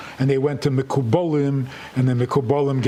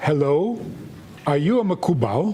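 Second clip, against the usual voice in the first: heavy, thick, put-on Indian accent. Rabbi retelling a strange phone call from a caller, heavy indian accent. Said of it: "a very heavy Indian accent from India".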